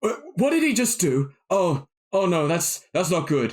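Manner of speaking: alarmed, stammering creature voice. Voicing a startled creature reacting to a player's spell: startled character voice. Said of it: "Adifier is, is, is startled, and he goes".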